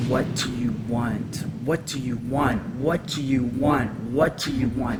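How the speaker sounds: acted menacing, insistent, mean and threatening tone. Recounting an entity that kept questioning the speaker: retelling a mean, threatening, loud voice. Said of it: "in a very mean, threatening, loud voice".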